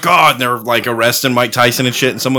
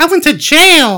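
pitch way up, slowed down; 4 dB louder than usual. Imitating a boxer who went to jail: high-pitched Tyson voice. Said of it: "and high voice, right? Super high T".

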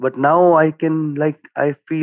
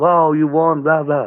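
acted-out screaming; 3 semitones higher than usual. Retelling how the security guy reacted to the win, retelling a scream. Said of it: "he's screaming".

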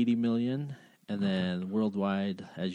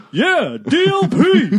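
very shrill, very loud, swooping yell; 15 dB louder than usual. Recalling what he yells when a projector brand appears on screen, retelling his own yell. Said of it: "I yell out".

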